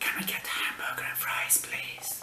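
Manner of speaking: breathy, hushed whisper. Telling a joke about a man in a library repeating his order, whispering.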